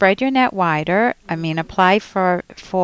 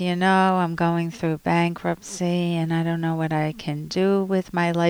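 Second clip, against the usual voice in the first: soft, hopeless, beaten-down tone; 5 dB quieter than usual. Showing a job seeker how not to come across to employers: hopeless, defeated tone. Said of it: "Can you hear the tone in my voice?".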